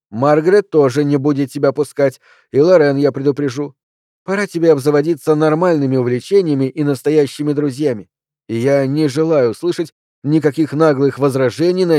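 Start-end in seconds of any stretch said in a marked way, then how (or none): none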